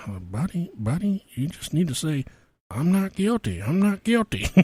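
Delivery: slow, hushed mutter under the breath. Retelling how a man's wife coached him on a recorded call, mimicking talking under her breath. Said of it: "she starts talking under her breath".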